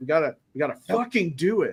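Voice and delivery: awkward, clumsy swearing like a non-swearer. Imitating a coach who swears awkwardly: imitating awkward swearing. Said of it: "sounds like a guy that doesn't know how to drop the F-bomb".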